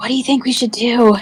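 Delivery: hushed whisper in a character voice. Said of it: "I kinda whisper".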